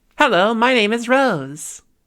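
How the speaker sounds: brightened voice carried across room. Showing voice projection across the room: projected voice, louder and brighter. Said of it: "Quite a lot louder, quite a lot brighter".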